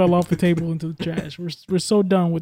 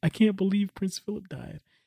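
fake, tearful, mournful crying voice; 8 dB quieter than usual. Mocking tearful subjects who mourn a prince: mock crying mourner. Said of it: "out there in full effect with tears in their eyes".

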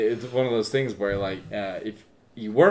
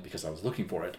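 put-on offhand tone, much quieter; 4 semitones lower, 13 dB quieter than usual. Retelling a scene, the speaker acts out Holmes answering Watson, mock-nonchalant as Holmes. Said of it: "Holmes just says nonchalantly".

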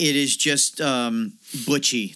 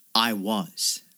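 mock deadpan delivery, lower; 3 semitones lower than usual. Describing a film scene where a son answers his mother, retelling a deadpan reply.

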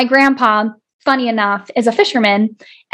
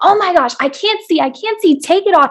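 put-on high, dramatic little-kid scream; 6 semitones higher than usual. Speaker recalls her grandpa patching her eye as a child, retelling a scream. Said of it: "i was like screaming like".

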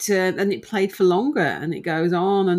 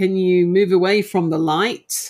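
mock-strict firm teacher voice, slower; 4 dB louder than usual. Retelling being firmer after asking nicely, retelling in a firm teacher voice. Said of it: "Her good old teacher's voice comes into it".

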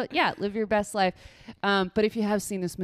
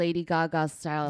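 ordinary talk, nothing marked

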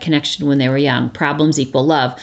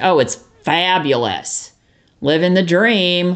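sarcastic, faked enthusiasm in a slow drawl; 3 semitones higher than usual. Acting out how people answer a casual greeting: mock-sarcastic reply. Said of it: "Or we get really sarcastic".

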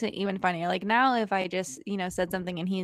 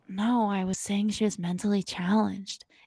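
put-on whispering voice. Retelling what a date says to remind her of a story: imitating someone whispering. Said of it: "whisper in my ear".

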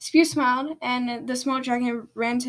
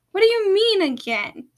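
high, loud, called-out shout; 8 semitones higher, 6 dB louder than usual. As the house shakes violently, a family member shouts back at the girl, shouting. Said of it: "Seashell shouted".

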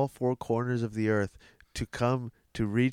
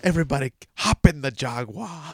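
loud, put-on Scottish accent; 4 semitones higher, 6 dB louder than usual. Showing off the best Scottish accent the speaker can do: Scottish accent. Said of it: "I can do the best Scottish accent".

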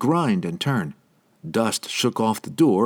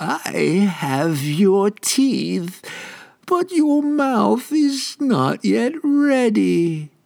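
lingering, very high, very slow, drawn-out voice; 11 semitones higher, 4 dB louder than usual. The nightmare dentist closes in on the medic, in a lingering voice. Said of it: "The nightmare's voice seemed to linger in the air longer than it should".

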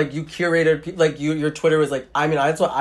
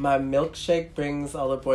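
put-on sad delivery, quieter; 6 dB quieter than usual. Retelling how a school speaker said a line: imitating someone saying it sadly. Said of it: "saying it very, like, sad".

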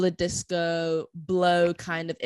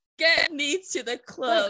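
mock screaming, higher; 9 semitones higher than usual. Retelling own reaction to hearing the track: imitating own screaming. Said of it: "I was screaming".

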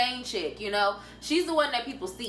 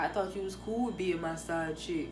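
exaggerated put-on dude voice; 6 semitones lower, 7 dB quieter than usual. Advising 'sis' about a man, acting out what guys say, in put-on dude voice.

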